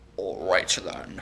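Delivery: soft, creepy, menacing villain voice. Retelling what a shady man delivering packages said, in an evil voice. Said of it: "He had like a really evil voice".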